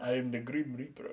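put-on Jamaican accent. Told to portray a character with the voice, Jamaican accent. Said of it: "Give them a Jamaican accent".

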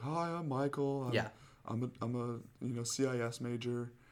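very slow, halting, stop-start speech. Retelling going around class giving introductions: imitating a student introducing himself. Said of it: "you have to go around and be like".

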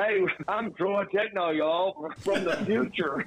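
slow put-on country robot voice. Showing what he'd say as his persona Troy Techno: country robot voice. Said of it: "do like a country robot".

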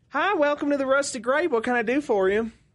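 put-on very high-pitched Southern belle voice and accent. Voicing the bartender at the Rusted Grape welcoming a player, Southern belle accent. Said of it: "It was like a Southern Belle".

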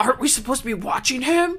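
high, very loud, belted-out character voice. Acting out a scene after Ricky slams the door, George voice. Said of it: "I have the George voice".

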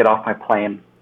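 ordinary delivery

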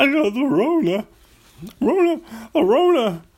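very high-pitched, loud, goofy voice. Right after needing to cough on the podcast, joke about being sick in a Shaggy voice. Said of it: "Makes me talk like Shaggy".

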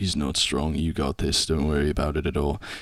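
soft, hushed, reassuring half-whisper. Voicing a character who leans over to another character: half-whispering. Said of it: "and whispers".

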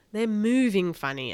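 ordinary delivery

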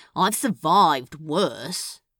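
short, snappish, sulky, snipped tone. Crowley answers Newt's question about staying closed up for weeks, snipping. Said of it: "the club owner wants nothing more than to curl up in his bed and refuse to move until things return to normal".

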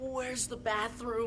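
tortured pained voice. A man asks where the bathroom is, in a tortured, pained voice. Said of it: "say it in such a tortured way".

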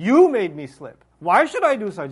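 acted-out accusing tone, loud and swooping. Warning listeners of a trap by voicing Iblis: imitating Iblis's accusatory tone. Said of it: "The accusatory tone".

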